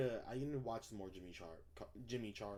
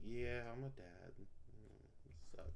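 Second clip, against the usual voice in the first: mock glum, soft, depressed, upset lamenting voice; 9 dB quieter than usual. Imitating an audience member who answered sadly: imitating an upset, depressed dad. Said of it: "why do you sound so upset".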